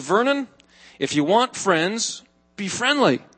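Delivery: ordinary delivery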